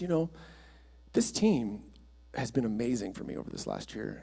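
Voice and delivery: voice catching, choked up with feeling. Retelling a volunteer's words at a team dinner: imitating someone choked up. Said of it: "kinda choked up".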